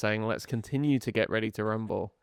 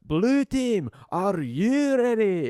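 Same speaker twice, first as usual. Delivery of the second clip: Scottish arena announcer voice, very high, very slow; 11 semitones higher, 4 dB louder than usual. Showing how a TV show's Scottish announcer would call the teams, Gladiators Scottish announcer impression. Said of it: "which had a Scottish announcer".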